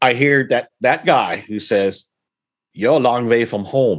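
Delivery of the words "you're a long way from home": put-on German accent. Retelling what a man said while the speaker took photos: German accent. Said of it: "but this time with a German accent".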